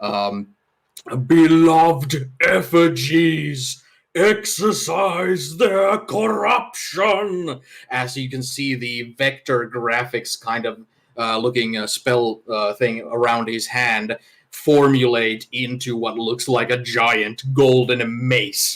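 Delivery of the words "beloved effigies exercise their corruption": strange, high, drawn-out, booming bellow. Speaker voices a game character casting a spell, bellowing in a strange voice. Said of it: "he bellows out again with this strange voice that he has".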